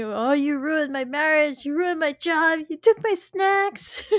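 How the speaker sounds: rising, indignant ranting. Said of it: "he starts ranting".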